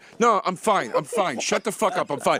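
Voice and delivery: put-on stubborn, insistent, protesting drunk man's voice. Retelling a friend puking in the street: imitating a drunk friend's protest. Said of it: "he's going like this".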